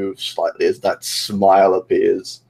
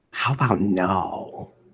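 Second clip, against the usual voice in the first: soft, quiet, manic villain voice; 6 dB quieter than usual. Refusing an order to take off the bandana, Joker voice. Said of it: "stop talking like the motherfucking Joker".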